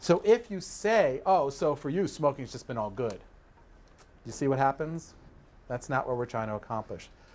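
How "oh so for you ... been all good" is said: sarcastic, snarky, snide, mocking tone. Demonstrating what not to say to a smoker, sarcastic and snarky. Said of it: "perceived as sarcastic or snarky".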